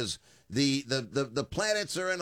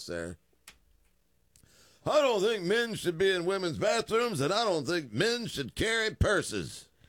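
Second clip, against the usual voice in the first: put-on very old, old-timey talk show host voice, pitched up; 5 semitones higher than usual. Speaker riffing on men carrying purses, in Cornelius Rutherford talk show voice. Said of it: "I sound like I'm a 125-year-old talk show host now".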